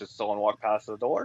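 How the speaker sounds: plain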